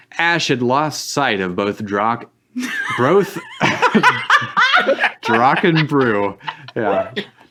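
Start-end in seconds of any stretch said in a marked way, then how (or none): 3.0-6.4 high, slow laughing.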